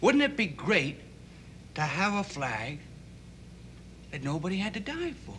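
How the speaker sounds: usual speaking voice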